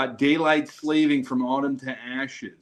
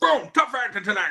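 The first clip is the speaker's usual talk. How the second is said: high-pitched football-announcer sportscaster call; 8 semitones higher than usual. Joking with the others about Madden games: John Madden impression. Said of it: "a guy doing an impression of Madden".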